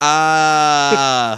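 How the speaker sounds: flat, limp mock scream spoken as a word. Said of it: "not, like, proper screaming".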